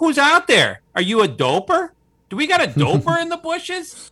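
very high, loud yell. Retelling a camping story, imitating someone yelling into the bushes. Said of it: "he just started yelling at him".

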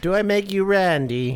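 very high-pitched, groovy British spy caricature voice. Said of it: "like an Austin Powers impression".

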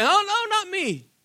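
mock high, panicked squeak.

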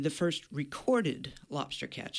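the word recorded stressed, leaned on. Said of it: "I'm gonna emphasize that word recorded".

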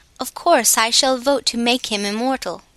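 ordinary delivery, nothing marked

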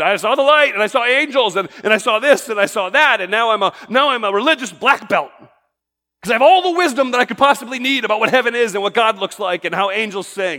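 put-on, heavily sarcastic voice. Mocking people who report seeing heaven after death: imitating sarcastically. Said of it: "I know I'm being sarcastic".

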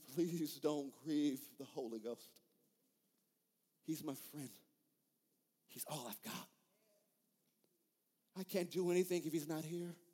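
tearful voice. Retelling a preacher's plea not to grieve the Spirit: imitating Kathryn Kuhlman weeping. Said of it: "She'll begin to cry and says".

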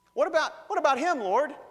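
acted shrill, very high, very loud whine. Retelling Peter objecting to Jesus: imitating Peter whining. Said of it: "I can almost hear the whining in his voice".

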